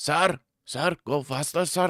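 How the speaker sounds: slow, laid-on, put-on Indian accent. Imitating a woman who starts talking in an Indian accent. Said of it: "started ripping the Indian accent".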